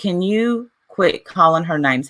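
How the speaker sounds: ordinary talk, nothing marked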